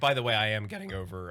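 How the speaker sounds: voice cracking and breaking. Speaker getting over a cold starts answering in a conversation: voice cracking. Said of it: "my voice just cracked".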